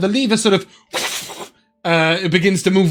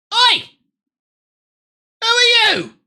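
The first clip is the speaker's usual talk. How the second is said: shouting squirrel character, higher pitch. Voicing a squirrel that calls out to a player: squirrel shouting. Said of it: "Single squirrel, just shouting at you".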